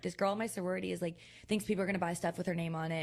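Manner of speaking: plain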